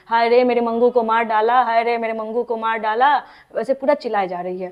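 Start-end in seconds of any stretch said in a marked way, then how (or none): none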